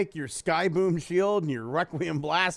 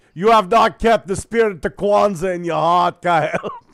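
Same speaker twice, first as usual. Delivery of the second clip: very loud, booming, spirit-like character voice; 10 dB louder than usual. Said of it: "the ghost of [name] visiting [name]".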